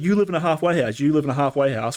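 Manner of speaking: yelling voice. Retelling what Don Vader kept yelling: imitating Don Vader yelling. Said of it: "Don Vader is out here yelling at me".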